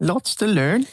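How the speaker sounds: terrible fake British accent, pitched very high. Trying out a british accent: bad british accent. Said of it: "My British accent's terrible".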